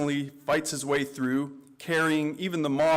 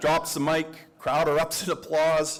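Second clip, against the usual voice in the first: ordinary delivery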